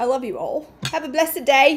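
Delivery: put-on semi-Australian accent. Signing off a masterclass done in british accents, fake half-australian accent. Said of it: "That just became semi-Australian".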